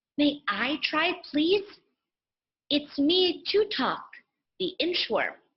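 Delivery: small, keen high voice. Reading a story aloud, the inchworm offers to help, tiny enthusiastic voice. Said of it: "a tiny voice filled with enthusiasm".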